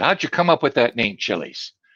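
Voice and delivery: ordinary talk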